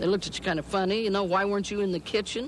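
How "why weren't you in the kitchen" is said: usual speaking voice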